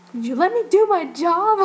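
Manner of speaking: mock loud sarcastic tone. Retelling how he turned around and asked the speaker, imitating a sarcastic question. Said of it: "Like really sarcastically".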